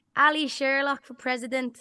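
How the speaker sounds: put-on thick Dublin street accent. Recalling a man who shouts to passersby, in a strong dublin accent. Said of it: "I'm gonna do his accent as well".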